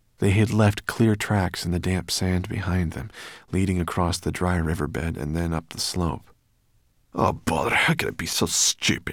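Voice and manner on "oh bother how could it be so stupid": cross, annoyed, fed-up irritated outburst. Sorrel reacts on seeing the tracks they left in the sand, cross. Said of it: "said Sorrel crossly".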